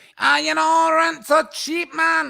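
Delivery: very high-pitched, loud put-on Glaswegian accent. Speaker imitates people in Manchester, in a put-on Glasgow accent. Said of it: "that's a Glasgow guy".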